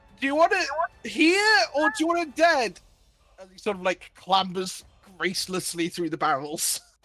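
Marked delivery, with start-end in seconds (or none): 0.2-2.8 very high, all-out yell at top of voice. Voicing a character yelling while clambering through barrels: yelling at the top of his voice. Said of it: "he sort of yells at the top of his voice".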